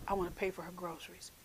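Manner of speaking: very quiet. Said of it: "you just very quietly say".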